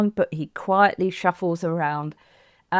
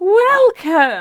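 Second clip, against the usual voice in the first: bright, strong, engaging happy voice, loud and high; 9 semitones higher, 7 dB louder than usual. Demonstrating a podcast opening as if greeting a long-unseen friend: strong, happy, engaging voice. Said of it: "say in a nice, strong, engaging, happy voice".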